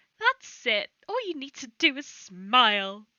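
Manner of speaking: very loud, booming, sickly cheerful sing-song voice. A voice calls out from the back of the tavern: nauseatingly cheerful voice. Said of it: "that same nauseatingly cheerful voice go".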